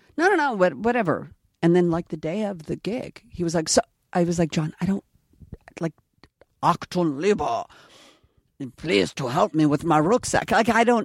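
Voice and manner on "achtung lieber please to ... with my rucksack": heavily exaggerated, over-the-top German accent. Showing John the German accent on the gig day, exaggerated German accent. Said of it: "do you want me to work on the German accent?".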